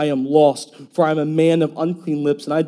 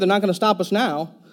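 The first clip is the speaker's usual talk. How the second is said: put-on old Chicago accent, higher pitch; 5 semitones higher than usual. Retelling her shout as police lights flash behind them: old Chicago accent. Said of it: "She gets that old Chicago accent going".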